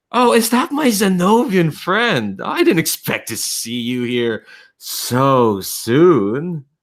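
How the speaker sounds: slimy charming voice. Narrator voicing a familiar voice piped through over the radio: slimy voice. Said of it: "very slimy and superlicious".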